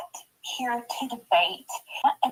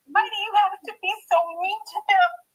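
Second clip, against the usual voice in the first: tearful words forced through sobs, pitched up; 8 semitones higher than usual. Defending people from someone who insults them, crying while talking. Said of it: "Easy with the crying".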